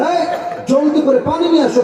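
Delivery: high, fast, urgent, rushed shout.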